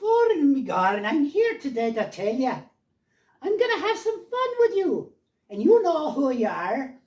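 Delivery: put-on Irish child voice. Showing how he first tried talking like an Irish kid, Irish kid accent. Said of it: "I could talk like an Irish kid".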